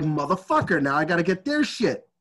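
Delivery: plain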